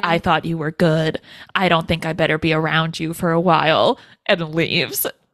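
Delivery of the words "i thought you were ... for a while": put-on completely flat voice, lower pitch. Recapping a story, the speaker imitates a woman's completely flat delivery. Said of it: "to like completely like flat".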